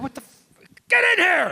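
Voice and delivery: very high, sudden blurted outburst. Retelling how a parking-lot rehearsal was interrupted: imitating Mel Brooks. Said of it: "And Mel Brooks is like".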